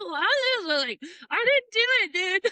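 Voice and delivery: high-pitched, incredulous protesting tone. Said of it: "That's where Jack was like".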